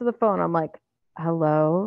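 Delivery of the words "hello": quiet, hushed, soft voice. Retelling answering the phone late at night in bed: imitating a quiet hello. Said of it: "And I'm trying to be quiet".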